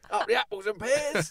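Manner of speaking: put-on Cockney accent, very high-pitched and loud. Joking that he'll turn Cockney at West Ham's Olympic Stadium, mock Cockney accent. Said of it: "he'll become a Cockney".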